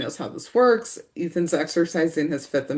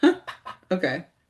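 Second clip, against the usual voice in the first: mock, amused, chuckling, laughter in the voice. Retelling a character's reaction to police arriving: imitating a chuckle.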